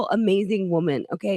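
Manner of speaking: normal talking voice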